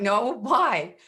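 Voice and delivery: acted, cracking up laughing mid-line. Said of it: "I crack up laughing".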